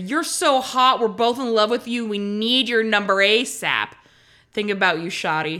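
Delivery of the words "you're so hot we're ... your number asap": normal talking voice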